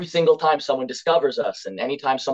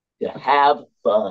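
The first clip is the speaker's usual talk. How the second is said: sarcastic tone, lower in pitch; 4 semitones lower than usual. Answering a question about the band's ultimate goal: sarcastic. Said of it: "I say sarcastically".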